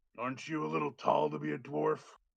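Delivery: put-on gruff old dwarf character voice. Voicing a dwarf with an eye patch who walks up to the bar: gruff dwarf voice. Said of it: "real gruff, real short dwarf walks up".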